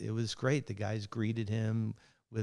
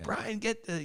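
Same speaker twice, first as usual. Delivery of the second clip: mock very high, urgent shout; 11 semitones higher, 3 dB quieter than usual. Retelling shouting at a security guard blocking the shot: retelling yelling at Brian. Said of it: "I am yelling at him the entire time".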